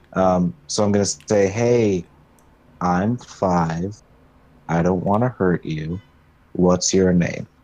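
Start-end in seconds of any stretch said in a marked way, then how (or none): 1.5-7.3 gentle, easygoing, unthreatening tone. Speaking in character to a dirty woman in a mining outfit: non-threatening tone. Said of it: "in the most non-threatening tone I can".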